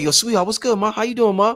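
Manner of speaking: put-on New York street voice. Retelling how men greet a passing lady: imitating a New York street come-on. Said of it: "We be like".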